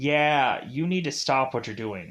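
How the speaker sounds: normal talking voice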